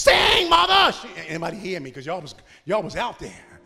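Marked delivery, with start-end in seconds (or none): 0.0-0.9 high, belted, encouraging yell. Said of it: "and I yelled out".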